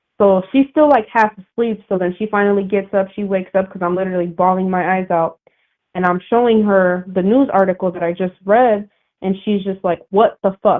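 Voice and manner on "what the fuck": mock furious outburst. Recounting showing someone bad news, the speaker acts out her reaction: imitating an angry outburst. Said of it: "she's so pissed off".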